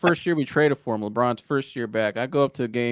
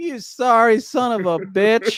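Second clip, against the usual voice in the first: put-on laughing while talking, higher and louder; 10 semitones higher, 5 dB louder than usual. Retelling a friend's remark after a missed dunk: imitating John laughing while talking. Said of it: "And John starts laughing".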